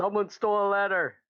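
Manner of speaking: shrill, loud, piercing scream. Playing a character raising the alarm in a hallway: screaming in character. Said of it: "You're just fucking screaming this in the hallway?".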